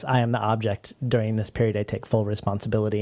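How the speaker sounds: usual speaking voice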